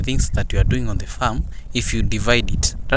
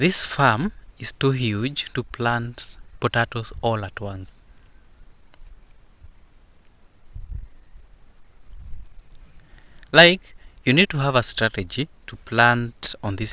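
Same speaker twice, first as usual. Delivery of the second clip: low, slow, soft, patient, unhurried explaining voice; 5 dB quieter than usual. Speaker re-explaining to a listener who isn't getting the point, low tone, slowly. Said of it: "let me just explain it in a in a low tone, slowly".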